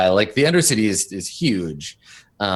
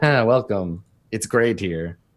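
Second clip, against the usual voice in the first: joking, mocking tone. Voicing a Twi'lek gesturing around jokingly: joking welcome.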